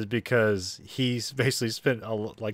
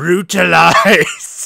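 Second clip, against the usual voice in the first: put-on Scottish wrestler voice, higher and louder; 7 semitones higher, 12 dB louder than usual. Imitating a wrestler's promo, the key word said in his voice: Drew McIntyre impression. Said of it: "whenever he says brutalize on a Scottish accent".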